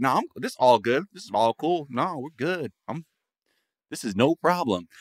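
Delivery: mock, forced casual, nonchalant, acting cool. Retelling how a lawyer reacted in court: imitating someone acting cool. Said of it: "he's trying to act cool about it".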